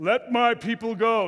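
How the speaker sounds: big, practised-sounding declaiming voice, slow and grand. Retelling Moses speaking before the Egyptians: Moses' great rehearsed voice. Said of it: "in that great voice that he's been rehearsing".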